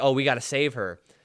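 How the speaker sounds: ordinary talk, nothing marked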